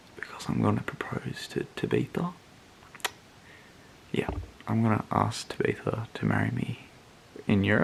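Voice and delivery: let-you-in-on-it confiding tone. Speaker talks about his packed suitcase before a trip to europe: keeping voice down. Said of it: "Have to keep my voice down".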